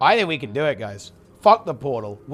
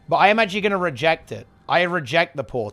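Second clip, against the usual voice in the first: normal talking voice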